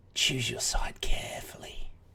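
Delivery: hushed, leaning-in sneering whisper. Leaning in toward the group, a game character speaks in a quiet sneer. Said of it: "Leans in really quiet, quietly, sneers".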